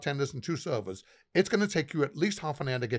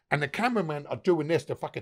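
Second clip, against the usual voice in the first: plain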